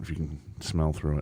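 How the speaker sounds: soft whispered voice.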